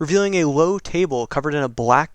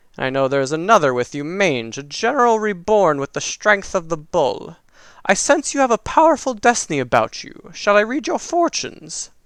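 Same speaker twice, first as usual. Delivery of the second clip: withered, crackling crone voice; 3 semitones higher than usual. Game master voicing a fortune-telling crone addressing the party, crackling old crone voice. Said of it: "As the crone speaks, her voice ca- crackles".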